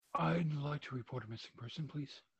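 overly dramatic, big theatrical delivery. Imitating a man's reenacted call reporting his mom missing: Tim McClure, very dramatic. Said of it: "very dramatic".

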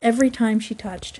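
ordinary delivery

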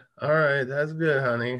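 put-on half-asleep, sleepy voice. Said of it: "asleep saying".

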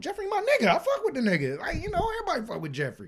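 acted, very high, playful, joking sing-song. Speaker recalls what he told his girl from the beginning: retelling a joking remark. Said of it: "like jokingly saying".

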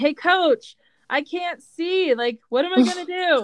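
put-on complaining call across, high and stretched out. Retelling a player calling over during a game: imitating a player yelling. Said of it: "he yells over to me".

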